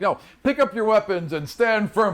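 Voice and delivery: high, yelled, commander-style shouting. Voicing a guard commander backing away from a fight: yelling orders at soldiers. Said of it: "yelling at people, like".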